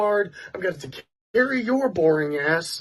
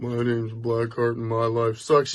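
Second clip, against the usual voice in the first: very low, flat, dead-level monotone; 11 semitones lower than usual. Mocking a player after doing a Blackheart, in a mocking Blackheart monotone. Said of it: "this monotone voice".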